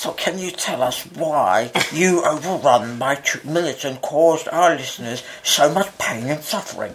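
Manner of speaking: fat, puffed-up voice.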